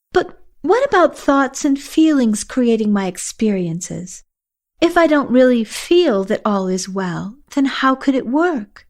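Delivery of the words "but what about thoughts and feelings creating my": plain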